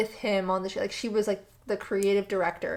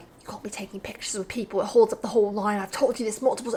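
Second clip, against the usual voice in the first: put-on thick British accent, male voice. Retelling how a man scolded her mom about pictures: imitating a thick British accent. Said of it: "a thick British accent".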